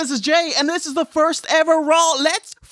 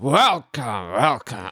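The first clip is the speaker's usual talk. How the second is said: put-on wrestling announcer voice; 3 dB quieter than usual. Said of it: "Can you give me a bit of Vince?".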